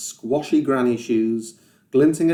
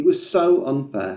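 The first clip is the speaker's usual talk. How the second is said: plain reading voice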